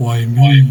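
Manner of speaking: grumbling character voice. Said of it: "in her grumbled voice".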